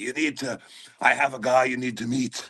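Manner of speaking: put-on Scottish accent, pressing and insistent. Retelling what a Scottish friend kept saying: Shrek accent. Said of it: "in the Shrek fucking accent".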